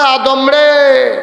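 solemn, high, slow, drawn-out call.

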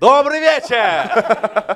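mock, very slow, loud stage showman voice.

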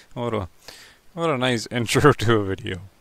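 very loud, cracking up laughing mid-line. Opening a video, the host can't stop cracking up, laughing uncontrollably. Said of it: "And now I can't stop laughing".

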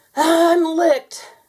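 gasping character voice. Narrator reading the story voices Carpenter locked in a bear hug, gasping. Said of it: "he gasped".

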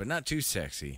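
ordinary delivery

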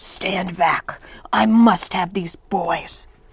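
wicked, venomous, evil hissing witch voice. Narrating a witch pointing a finger at the narrator, the most evil hiss. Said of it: "she hissed the most evil hiss".

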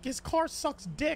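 heavy emphasis on dick, stretched out slowly.

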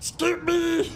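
odd fantasy creature voice, like a cave creature. Asked to say it in Smeagol's voice, the speaker gives it a try: Smeagol voice. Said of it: "Scoop me in Smeagol's voice?".

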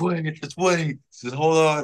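put-on talking through tears. Retelling getting news of going to the majors: imitating crying speech. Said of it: "I'm, like, crying".

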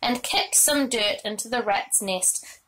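ordinary delivery

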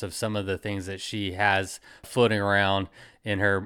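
normal talking voice

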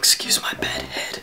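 soft, hushed whisper. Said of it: "the reason I'm whispering".

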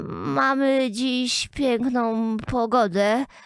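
faint, feeble, trembling little voice, drawn-out Mamy. Reading a story, the Duchess speaks as the Queen glares at her, weak trembling voice. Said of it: "rzekła księżna słabiutkim, drżącym głosem".

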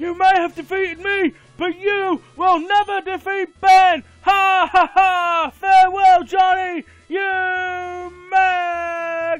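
put-on strained yelling. Voicing the defeated gym leader Lieutenant Surge: throat-straining shout as Lt. Surge. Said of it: "This really hurts my throat".

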